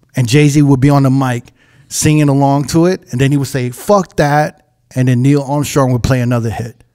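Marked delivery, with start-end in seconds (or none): none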